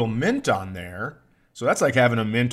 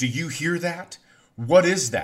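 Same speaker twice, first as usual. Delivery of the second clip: high, panicked, frightened and alarmed; 5 semitones higher than usual. Retelling a loud train-like noise outside, imitating panicked Olivia. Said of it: "Olivia is panicked".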